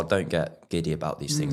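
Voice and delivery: ordinary talk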